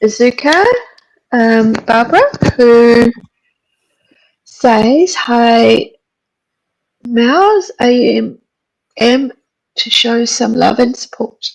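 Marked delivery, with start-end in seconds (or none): 5.1-11.4 voice giving out and cracking. Reading a viewer's comment aloud to another speaker, voice giving out. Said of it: "Sorry, my voice went".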